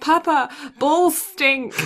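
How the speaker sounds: put-on sleepy, high, loud childish voice.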